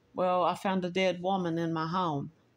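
usual speaking voice

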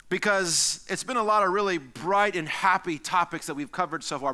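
ordinary talk, nothing marked

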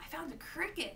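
blurted out suddenly, exclaiming. Reading a story: a character shows his parents what he found, exclaiming. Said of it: "Mario exclaimed".

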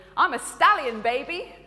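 booming, proud voice. Speaker retells a movie scene where the donkey becomes a stallion, retelling a proud boast. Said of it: "he says proudly".

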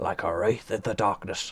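ordinary delivery

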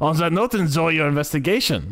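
attempted put-on German accent. Saying goodbye, trying out a German accent. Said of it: "German accent".

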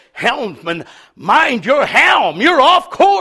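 called-out delivery with rising pitch. Voicing the lieutenant who hollers to the helmsman, imitating a hollered command. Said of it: "the lieutenant that hollers out and says".

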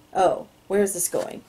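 plain reading voice

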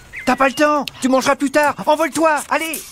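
very high, panicked, frantic pleading. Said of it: "Du calme, du calme".

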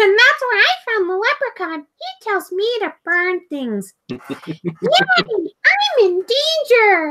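put-on very high, sing-song, swooping, wobbly little kid voice. Offering the closest voice the speaker can do: Ralph Wiggum impression. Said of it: "The closest thing I can do is maybe Ralph Wiggum".

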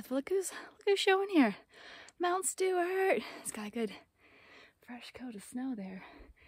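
breathless, out of breath, winded talk. A hiker heading up a snowy peak speaks to the camera; out of breath. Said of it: "Definitely feeling out of breath".

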